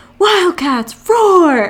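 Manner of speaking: shrill, very high, loud cheering scream. Retelling someone screaming at people outside from an eighth-floor window: retelling a scream. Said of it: "Brian was screaming at them".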